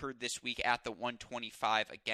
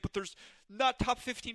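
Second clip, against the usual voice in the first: mock very high, snide, mocking parody voice; 12 semitones higher than usual. Speaker voices an imagined listener's objection; mocking voice. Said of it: "I don't know why I did the mocking voice".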